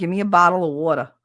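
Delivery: put-on New Jersey accent. Showing how someone from jersey would ask for a bottle of water, in a new jersey accent. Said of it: "Or if you're from Jersey".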